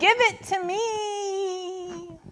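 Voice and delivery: high, slow, drawn-out whiny voice. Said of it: "they all screamed".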